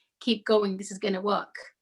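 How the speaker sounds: ordinary talk, nothing marked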